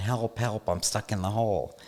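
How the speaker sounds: light, calling-out tone. Telling a joke about a man stuck in a hole, voicing his cry: retelling a yell for help. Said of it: "and he's yelling".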